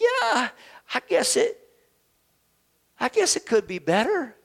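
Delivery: high, hesitant, grudging, reluctant voice.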